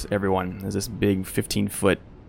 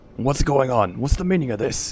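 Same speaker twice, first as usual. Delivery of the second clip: dwarf voices yelling, pitched high; 5 semitones higher, 4 dB louder than usual. Narrating a scene to players, voicing dwarves who yell out: dwarven voices yelling. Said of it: "dwarven voices yell out".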